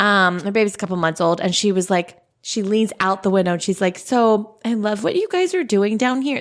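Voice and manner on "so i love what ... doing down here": sugary, fake-sweet, put-on friendly gush. Retelling what an upstairs neighbor said from her window: imitating the neighbor's fake-sweet voice. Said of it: "This is exactly what she sounded like".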